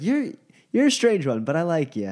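amused, talking through laughter. Voicing a character who laughs at a stranger's odd claim: laughing while talking in character. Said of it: "she just kinda laughs and is like".

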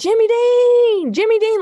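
put-on, very high, stretched-out yell. Retelling how he banged on the door every morning: imitating Richard yelling. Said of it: "And he would just yell".

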